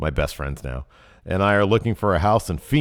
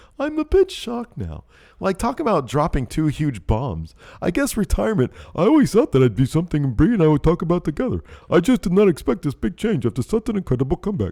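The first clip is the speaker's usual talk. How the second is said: put-on dim-witted, dopey voice, very high; 11 semitones higher than usual. Acting out a shocked reaction to Bree, use Elliot's dumb person voice. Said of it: "I turned into Elliot's dumb person voice".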